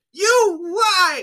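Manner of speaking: mock angry kid, very high. Retelling a kid's reaction after getting a shot: imitating an angry kid. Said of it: "he got so mad when he came out".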